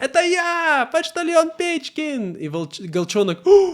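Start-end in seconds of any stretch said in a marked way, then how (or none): 0.0-2.3 cross, angry voice pitched very high. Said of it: "и он такой злой".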